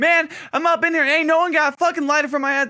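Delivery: high-pitched, shrill, hollering rant. Retelling a man at a nice-ish restaurant who wanted a lighter: retelling a yell. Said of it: "he's all yelling like".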